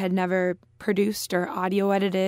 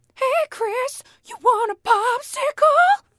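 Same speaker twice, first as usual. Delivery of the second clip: put-on old-man voice, much higher pitch; 4 dB louder than usual. Asked to give a little of it, the speaker does the Family Guy pedophile neighbor voice. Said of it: "Give us a little of your pedophile guy from Family Guy".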